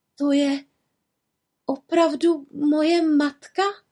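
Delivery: quavering voice. A daughter shown a vision of her imprisoned mother, asking in a trembling voice. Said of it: "Zeptala se Merlia roztřeseným hlasem".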